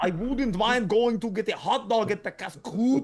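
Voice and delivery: loud, teasing, put-on Austrian accent. Imitating the other speaker's odd French pronunciation: imitating friend's Austrian-sounding French. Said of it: "It sounds Austrian or something".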